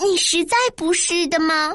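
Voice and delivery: plain reading voice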